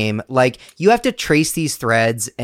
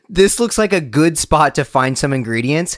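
ordinary talk

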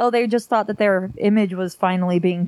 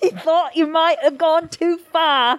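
put-on royal-sounding posh accent, pitched up; 7 semitones higher than usual. Reading out a recorded phone call as Prince Charles: Prince Charles impression. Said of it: "I don't know where that accent".

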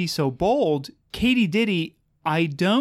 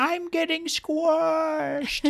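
high, slow, squeaky mock dying wail. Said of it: "and then yell it all over".

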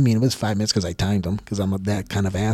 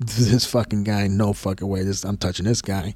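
usual speaking voice

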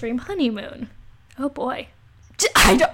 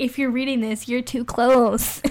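ordinary delivery

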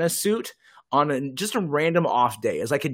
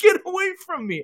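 very high-pitched, frightened screaming. Retelling a man being chased across campus, screaming. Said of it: "he's screaming, like".

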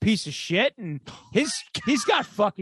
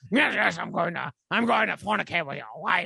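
awful, way-off, creaky put-on voice. Trying the impression again after being told it was off: awful Baron impression. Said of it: "That's awful".

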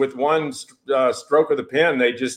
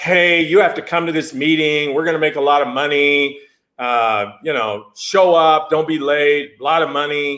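plain

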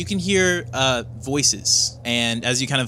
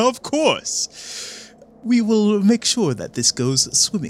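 high-pitched scheming, plotting voice. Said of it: "you hear the other voice go".

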